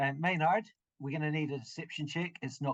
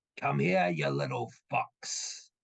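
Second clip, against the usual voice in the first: raspy, abrasive, creaky dragon call. Narrating a game scene, voice the dragon shouting out at everyone. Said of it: "the dragon just shouts out in common".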